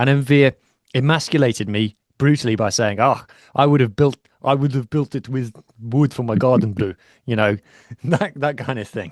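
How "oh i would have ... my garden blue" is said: put-on, imitated Afrikaans accent. Retell a brutal reply about your flat pack furniture, imitating Envir's Afrikaans accent. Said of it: "What's that accent that you're imitating there?".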